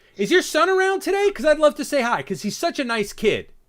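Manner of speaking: very high, very loud, furious, angry shout. Paying compliments to Anthony in the wrong tone: very angry, serious tone. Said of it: "in a very angry, very negative, very serious tone".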